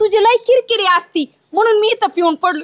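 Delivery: ordinary delivery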